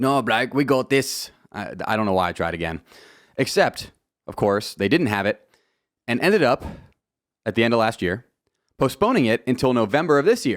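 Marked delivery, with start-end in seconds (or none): 0.0-1.3 slow, awful put-on Australian accent. Quoting what they said, trying again in a bad Australian accent. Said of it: "One of the worst Australian accents you'll ever hear".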